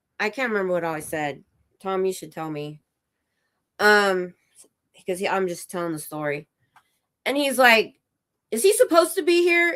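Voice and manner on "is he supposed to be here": mock indignant, agitated, very high-pitched voice. Retelling the man's question about Tom: imitating someone bent out of shape. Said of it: "Just all bent out of shape".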